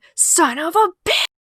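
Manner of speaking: mock over-the-top movie scream, very high, shrill. Retelling own second-grade reaction to getting out: imitating a scream.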